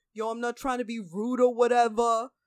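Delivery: put-on loud, heavy Brooklyn accent, laid on thick. Retelling what a man said about a shirt, in a thick brooklyn accent. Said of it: "he's got the most Brooklyn accent I've ever heard".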